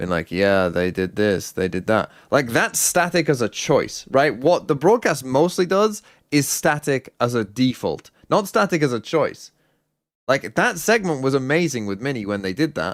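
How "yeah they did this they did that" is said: mock, very low, dead-level bored drone. Describing a man on a broadcast segment, imitating a bored voice. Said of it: "talking in a very like bored voice".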